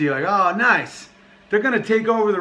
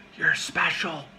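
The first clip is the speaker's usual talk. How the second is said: put-on whisper, quieter; 6 dB quieter than usual. Acting out someone recruiting a lonely man: imitating a whisper. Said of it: "someone just whispers".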